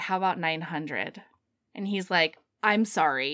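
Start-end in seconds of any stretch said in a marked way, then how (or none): 0.0-1.2 put-on mumble, lower in pitch and slower. Retelling a story, imitating the woman mumbling her reply. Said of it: "And she sort of like mumbles".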